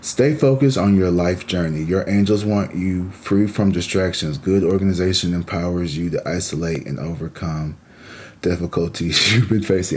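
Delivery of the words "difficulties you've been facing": speaking through laughter. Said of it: "I'm sorry, I'm laughing".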